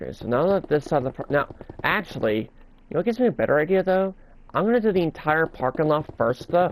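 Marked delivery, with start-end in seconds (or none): 4.5-6.7 voice cracking on a word mid-sentence. Narrating a park build to listeners, the speaker's voice cracks: voice cracking. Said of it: "Sorry about the voice crack there".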